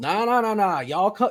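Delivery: hearty, high, loud, folksy host voice.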